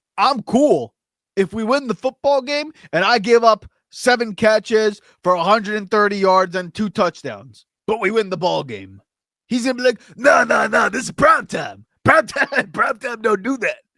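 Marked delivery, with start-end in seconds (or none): 10.2-13.8 confident athlete voice with full swagger. Speaker imagining a football star's reply about giving up catches, Prime Time impression. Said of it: "That's my prime time impression".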